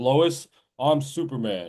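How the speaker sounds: voice dropped down deep. Describing Clark Kent's movie transformation, the speaker quotes him: lowered Superman voice. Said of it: "and his voice gets down lower".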